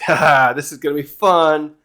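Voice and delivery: put-on laughing while talking. Retelling a manga panel where Scopper stands there laughing: imitating Scopper laughing while talking. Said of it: "he's just there laughing, like".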